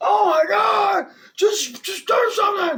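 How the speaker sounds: very shrill, loud, drawn-out pained scream. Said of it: "And I was screaming".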